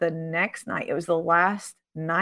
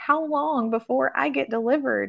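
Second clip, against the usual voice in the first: play-acted tearful crying, pitched up and pleading; 7 semitones higher than usual. Retelling a question asked in class: imitating Ruth crying. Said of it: "she begins to cry".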